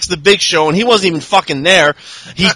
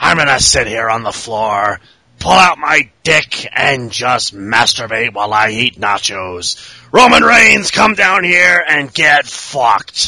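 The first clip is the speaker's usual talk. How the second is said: voice dropped right down; 8 semitones lower than usual. Joking about a wrestling match booking: imitating Vince McMahon. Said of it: "this was essentially Vince McMahon going".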